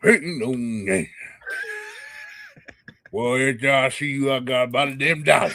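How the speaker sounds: put-on lively old man voice. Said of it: "You gotta say like an old man".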